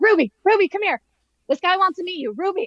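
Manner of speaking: put-on high, screaming call across a distance. Retelling a man flagging people down, the speaker imitates him screaming across the room. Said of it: "he's like screaming across the thing".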